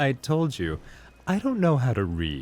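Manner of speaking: soft, lofty, self-important pretentious delivery. Acting out a favorite bit's character, the speaker delivers the line mock-pretentious. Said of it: "the pretentious illiterate".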